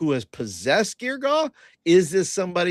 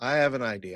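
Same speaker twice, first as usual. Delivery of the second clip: repeated quietly and softly to self.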